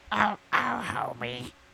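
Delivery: high-pitched, cartoon-style voice. Answering a request for an impression: Marge Simpson voice. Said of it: "do your best Marge Simpson impression".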